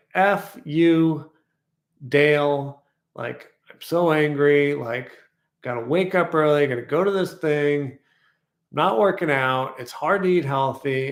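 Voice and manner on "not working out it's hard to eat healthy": ordinary talk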